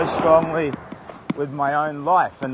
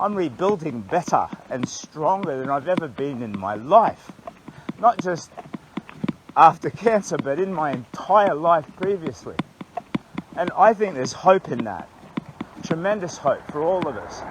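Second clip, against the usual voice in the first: tearful, heartfelt, emotional speaking voice. Walking back into the township after the fire, getting teary. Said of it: "I'm getting a bit teary".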